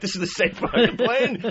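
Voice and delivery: acted-out alarmed, freaked-out, panicky outburst. Retelling noticing the same blue monitor on the plane: imitating freaking out. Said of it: "I started freaking out".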